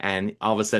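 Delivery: plain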